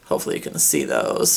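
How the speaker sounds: low, creaky, cracking voice.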